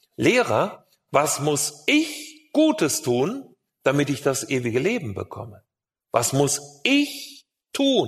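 slow, wide-swinging stress on gutes and tun.

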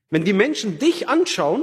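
dich stressed, said high and wide.

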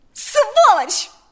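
piercing shriek, very high and very loud. Mariana reacts to Igor's words, screaming. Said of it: "закричала Марьяна и опять разрыдалась".

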